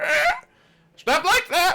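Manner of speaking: shrill, very high, swooping, squawking parrot voice. Voicing a parrot reacting to the horn: parrot voice. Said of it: "you hear the parrot".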